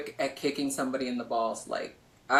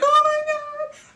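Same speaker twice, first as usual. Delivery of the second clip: very high, loud fake-crying wail; 7 dB louder than usual. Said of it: "So, I started crying".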